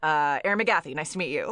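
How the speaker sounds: eager, salesy real estate agent voice. Retelling introducing oneself with a handshake, imitating a real estate agent voice. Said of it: "probably in that voice".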